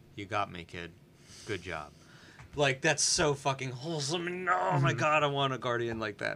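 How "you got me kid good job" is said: low, soft, super deadpan, no emotion. Imitating how she jokes with a kid, mock deadpan with no emotion. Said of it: "super deadpan, no emotion".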